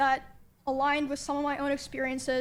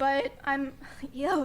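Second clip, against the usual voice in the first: voice cracks mid-phrase on "yo". Talking to viewers about a man and his community, voice cracking. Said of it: "sorry, voice crack".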